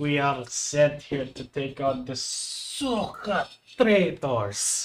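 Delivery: put-on thick Russian accent, rousing speechmaking delivery. Retelling a general's speech from a fan-made video, in a heavy russian accent. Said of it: "the general who gives a speech is like super like Russian".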